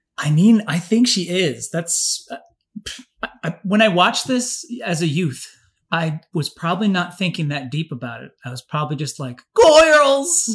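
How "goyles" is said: put-on excited comic voice, higher and louder. Imitating own childhood excitement in a Jerry Lewis voice. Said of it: "That's my Jerry Lewis".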